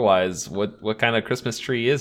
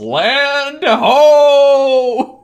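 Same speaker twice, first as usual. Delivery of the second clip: shrill, far-carrying booming holler, ho drawn out long; 12 dB louder than usual. Retelling a scene where they crash into the ice, imitating a yell. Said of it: "and then he yells".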